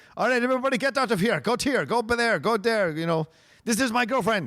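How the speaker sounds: put-on Greek accent. Speaker imitates a man who likes to get people in line, doing his greek accent. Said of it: "I'm trying to do his Greek accent".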